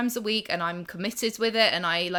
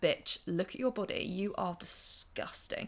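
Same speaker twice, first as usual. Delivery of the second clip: hushed, quiet whisper; 3 semitones lower, 14 dB quieter than usual. Acting out the inner critic insulting someone's body: voicing the inner critic. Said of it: "the critic that's trying to be like".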